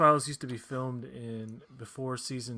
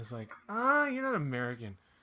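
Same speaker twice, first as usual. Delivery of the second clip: usual speaking voice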